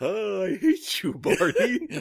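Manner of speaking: slow, high belted singing. Playing a second Barney in a joke: Yogi Bear voice. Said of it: "Turning a bit more into Yogi Bear".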